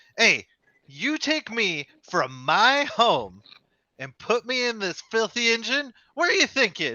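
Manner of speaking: high, swooping, outraged angry little olive voice. Voicing an angry sentient olive scolding a player character: angry olive voice. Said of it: "this angry little olive turns its pitted hole at you".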